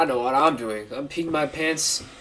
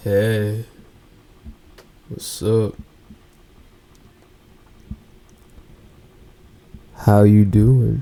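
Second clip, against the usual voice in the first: put-on deep, loud, unhurried voice; 4 semitones lower, 7 dB louder than usual. Showing off their own voice with a casual greeting: deep voice. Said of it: "I got a deep voice myself too. Like".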